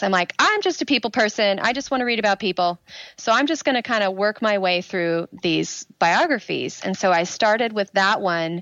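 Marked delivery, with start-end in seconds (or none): none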